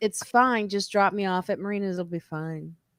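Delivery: mimicked, very calm tone. Retelling what he said in the car while she grew angrier, mimicking a very calm tone. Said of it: "very calmly".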